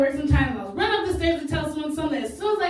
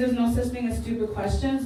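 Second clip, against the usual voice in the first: ordinary talk, nothing marked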